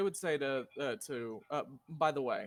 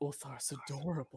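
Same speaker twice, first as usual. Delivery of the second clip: whispered, quieter; 4 dB quieter than usual. In a roleplaying game, a player's character leans over to Jaden, whisper. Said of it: "whisper to Jaden".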